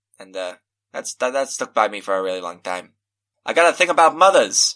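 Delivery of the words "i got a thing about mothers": very loud and higher-pitched. Speaking in character, aimed in another person's direction, saying it really loudly. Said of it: "I say really loudly".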